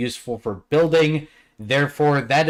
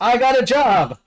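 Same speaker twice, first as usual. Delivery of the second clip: put-on very high, shrill, full-throated top-of-lungs drunken scream; 9 semitones higher, 4 dB louder than usual. Narrator voicing a drunk dwarf who pops into the shop, screaming at the top of his lungs. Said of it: "he screams at the top of his lungs".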